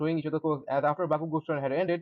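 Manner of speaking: ordinary delivery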